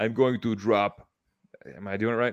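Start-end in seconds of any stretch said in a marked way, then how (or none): 0.0-1.1 put-on very slow, deliberate, drawn-out Russian accent. Asked to do the bit again in a Russian accent, answer the crowd in a Putin voice, Russian accent. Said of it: "do that in a Russian accent".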